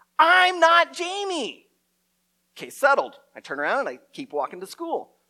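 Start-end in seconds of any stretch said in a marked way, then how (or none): 0.2-1.7 put-on very high-pitched shout in a six-year-old voice. Retelling yelling back at people following them as a kid, little-kid yell. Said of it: "I yell back in my little 6-year-old voice".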